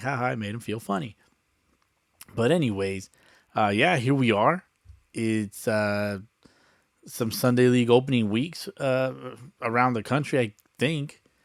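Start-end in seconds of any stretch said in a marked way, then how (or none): 0.0-1.1 acted-out, smug, self-amused, gloating laughing taunt. Imagining the wife laughing at herself after leaving the room: imitating wife laughing. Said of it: "laughing at herself right now, like".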